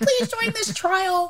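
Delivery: very high-pitched announcer-style ad voice. Imitating the voice from a radio ad for clinical trials: imitating a high-pitched ad voice. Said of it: "I believe it was this high-pitched".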